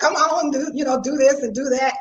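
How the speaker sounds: usual speaking voice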